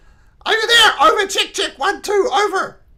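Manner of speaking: shrill, high, very loud yelling. Calling a distant person over a radio again: shouting into a radio. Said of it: "You don't have to shout".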